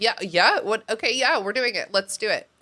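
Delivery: put-on scared, flustered, yielding tone. Retelling how Hermione gives in to Harry: imitating frightened Hermione. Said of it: "she's afraid of Harry Potter's anger".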